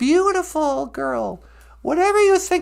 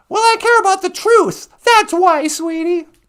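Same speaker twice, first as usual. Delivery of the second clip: worked-up, heated, raised voice; 3 semitones higher, 6 dB louder than usual. Playing a woman arguing with a man who tells her to calm down; heated. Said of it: "Take it easy".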